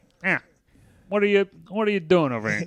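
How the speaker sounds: put-on older dad voice. Pitching a new character to the group, speaker shows how he'd talk: older dad type voice. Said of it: "he has this voice sound like".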